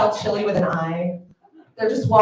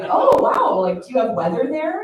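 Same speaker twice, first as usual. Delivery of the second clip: put-on, fake interested tone; 5 semitones higher, 4 dB louder than usual. Pretending to find a hometown interesting: fake interested tone. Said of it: "pretend that it's interesting".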